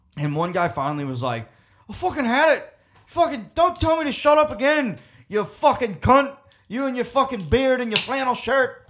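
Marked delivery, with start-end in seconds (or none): 1.9-8.7 acted, very high, loud scream in a poor Irish accent. Retelling a guy who was screaming at the speaker, retold scream, bad irish accent. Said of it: "I can't do an Irish accent".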